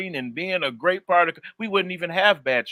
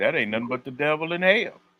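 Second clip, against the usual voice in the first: plain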